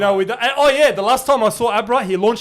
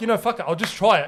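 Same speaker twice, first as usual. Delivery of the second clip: normal talking voice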